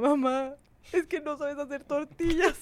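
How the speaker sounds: mock tearful, crying delivery. Retelling coming home to complain to Mom: imitating own past crying. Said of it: "Y yo llegaba llorando con mi mamá".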